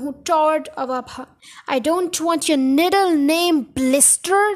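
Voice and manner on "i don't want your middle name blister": loud, booming bellow. Narrator reading the Gorgon's reply to Nigel, bellowing Trunchbull voice. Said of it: "the Gorgon bellowed".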